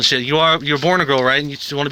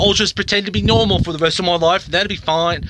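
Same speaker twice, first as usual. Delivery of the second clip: terrible, bad put-on fake British accent; 3 semitones higher than usual. Describing a route she could have taken, the speaker uses a terrible put-on British accent. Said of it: "That was a terrible British accent".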